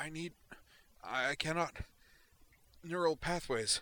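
gasping voice. Writhing on the sofa in tears, she answers a man asking if she's okay, gasping. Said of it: "she gasped".

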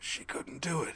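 very quiet, whispered, scraping rasp. A narrator voicing a bloodied, battered scientist flopped on his back, rasping. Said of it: "Rice rasped".

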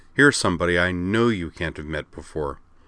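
ordinary delivery

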